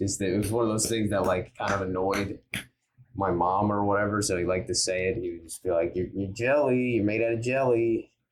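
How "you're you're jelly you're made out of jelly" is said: dopey, goofy, silly put-on dad-joke voice. Retelling what a guy used to say to annoy the speaker's mom, goofy voice. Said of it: "he would say like in a goofy".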